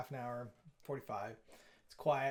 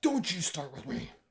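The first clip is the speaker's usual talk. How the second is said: pitched-up, demonic, growling devil voice; 5 semitones higher, 4 dB louder than usual. Annoyed at a coding error, snapping at the screen: devil voice. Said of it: "the devil voice that came out of me".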